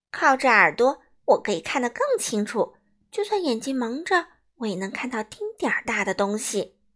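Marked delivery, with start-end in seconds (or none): none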